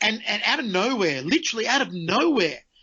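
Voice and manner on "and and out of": plain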